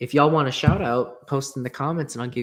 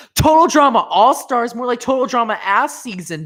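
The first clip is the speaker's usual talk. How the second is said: shrill, full-volume scream, pitched way up; 11 semitones higher, 9 dB louder than usual. Deciding to scream for the first time, screaming loudly. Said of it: "that's me actually screaming".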